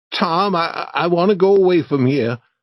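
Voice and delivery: trembling, stumbling on "I". Reading a story aloud, a frightened boy in a cave speaks: shaking voice. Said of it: "Huck said in a shaking voice".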